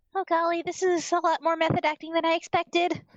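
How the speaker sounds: soft whispering. Voicing a character who comments to herself mid-performance: quiet whisper to herself. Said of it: "she kinda quietly whispers to herself".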